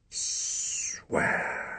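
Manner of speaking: breathy, hissed whisper. Reading a father's one-word line to his son: hissed. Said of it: "hissed his father".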